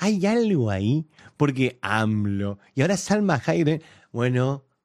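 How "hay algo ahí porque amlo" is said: mock slow, drawn-out speech. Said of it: "tenés que hablar como Sheinbaum".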